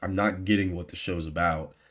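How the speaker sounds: usual speaking voice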